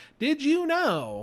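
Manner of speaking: very high, text-to-speech robot voice. Mocking the fact videos on TikTok: TikTok robot voice. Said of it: "it's that robot voice".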